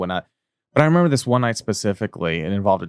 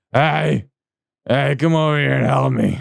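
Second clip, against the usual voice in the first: put-on creaky, high, sloppy, drawn-out drunken calling out; 5 semitones higher than usual. Retelling calling someone in to help while drunk: imitating a drunk scream. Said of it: "drunk scream".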